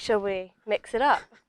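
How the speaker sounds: usual speaking voice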